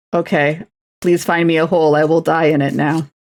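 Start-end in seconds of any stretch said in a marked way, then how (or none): none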